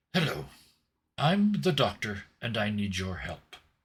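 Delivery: calm, gathered, self-possessed, even delivery. Voicing the Doctor starting his greeting again: the Doctor's voice. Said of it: "clasps the lapels of his jacket and collects himself".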